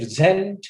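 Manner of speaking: preSENT with second-syllable stress.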